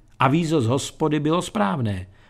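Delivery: normal talking voice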